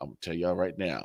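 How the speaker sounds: put-on deep voice. Retelling how Jason walked in on them: imitating Jason's deep voice. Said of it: "he's got a deep voice".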